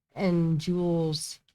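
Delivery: ordinary delivery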